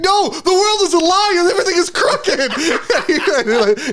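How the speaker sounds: put-on tearful crying voice. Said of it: "he's, like, crying and weeping".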